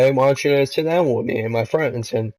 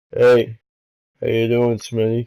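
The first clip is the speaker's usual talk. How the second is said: very deep voice in the deepest bass register. Imitating how a man greeted him, in a put-on very deep voice. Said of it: "he just sounds like this".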